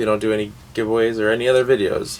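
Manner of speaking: ordinary talk, nothing marked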